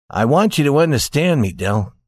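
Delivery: ordinary delivery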